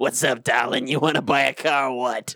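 voice of a woman who smokes. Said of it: "this woman who smokes tried to sell me a car".

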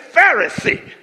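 sassy delivery with swagger and attitude. Showing the congregation how to say the word: saying it with attitude. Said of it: "you gotta say it with attitude".

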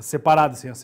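low, quick delivery.

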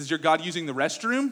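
mocking, taunting tone. Retelling a prophet taunting rival prophets: retelling a mocking taunt. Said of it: "and he's mocking them".

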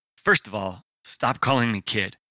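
ordinary delivery

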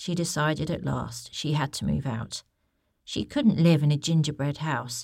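plain reading voice

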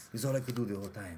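deep-pitched Spanish-accented speech. Recalling playing Vittorio Vidal, still speaking in the Antonio Banderas accent. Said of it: "You still haven't broken character".

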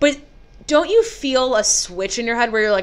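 normal talking voice

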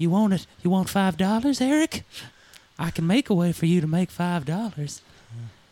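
put-on high-pitched, creepy, coaxing old-man voice. Acting out a cartoon scene opposite Cartman, in Herbert's creepy old man voice. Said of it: "herbert the pervert ... is trying to like lure".

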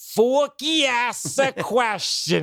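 very high, drawn-out cartoon voice. Retelling watching shorts with Una, doing the voice: Forky voice. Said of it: "Una and I are just doing the voice".

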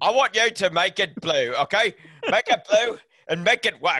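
very loud, high, bellowed put-on English accent. Imitating a director telling someone to make it blue: Michael Caine impression. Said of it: "that's Michael Caine representing Christopher Nolan".

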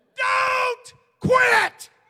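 very high, loud scream, not drawn out. Preaching on a wednesday night, urging listeners not to quit: screaming. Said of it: "I rise on this Wednesday night to scream as loud".

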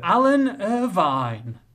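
slow, deliberate, item-by-item delivery.

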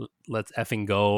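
ordinary delivery

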